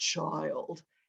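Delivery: low, soft, revered wise elder voice. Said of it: "And with that voice".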